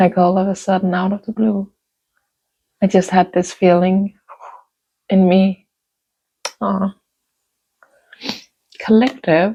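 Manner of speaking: emotional, touched. Speaking to a listener about childhood friends, getting emotional. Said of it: "I'm getting emotional now".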